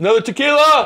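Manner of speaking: shrill, high-pitched, loud scream. Retelling how he ordered in a nice restaurant, retelling a scream. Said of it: "he screams it".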